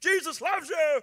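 very high, very loud bullhorn-style blaring shout. Recalling a man with a bullhorn in everybody's face: imitating a bullhorn shout. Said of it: "Bullhorn right in everybody's face".

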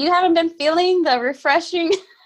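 high-pitched talking through giggles and laughter. Teasing the other speaker about the refreshing weather, laughing while talking. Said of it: "I can't even say it without laughing".

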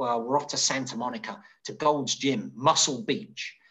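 ordinary talk

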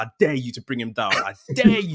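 goading, taunting delivery with rising pitch. Retelling watching a match and yelling at the TV, retelling a scream at the TV. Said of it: "I was already screaming at the TV".

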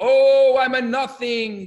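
very slow, loud, high, stretched-out scream. Retelling a story of students in a study hall: imitating someone screaming.

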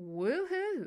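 loud, high, sneering, sarcastic whooping jeer. Narrator reads a father jeering after his daughter names the designer, sarcastic jeer. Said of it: "Henry jeered sarcastically".

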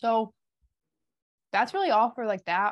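speaking with mouth full. Wrapping up a topic while finishing a chip: eating while talking. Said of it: "I'm gonna finish eating this chip".

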